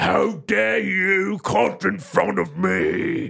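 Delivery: put-on slow, rough shout in British accent. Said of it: "like a British Batman voice".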